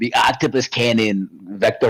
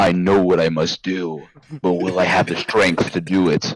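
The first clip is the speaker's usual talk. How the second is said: solemn, deep, profound noir inner monologue voice. Describing how Mort sounds in his deeper thoughts, profound deep Mort voice. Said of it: "the most profound, deep voice in his deeper thoughts".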